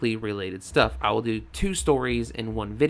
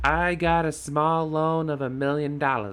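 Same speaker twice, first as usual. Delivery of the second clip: clumsy, bad, put-on New York accent; 4 semitones higher than usual. Trying again to quote the line about the loan: bad Donald Trump New York accent. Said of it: "I can't do a New York accent".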